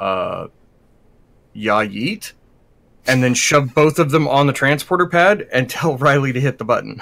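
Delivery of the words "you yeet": bone dry tone. Player voicing Zine, turning to the other two characters, deadpan as Zine. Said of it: "deadpan shrug".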